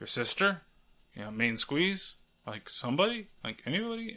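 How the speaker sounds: mock muttering under breath. Recounting a character's questions near a story's end, imitating muttering under breath. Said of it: "asking all those weird questions under her breath".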